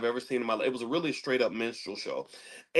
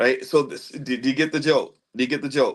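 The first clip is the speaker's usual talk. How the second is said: plain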